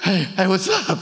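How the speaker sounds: put-on breathless voice. Retelling answering her phone call after running, acting out being out of breath. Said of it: "I'm out of breath".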